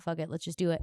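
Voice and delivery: ordinary talk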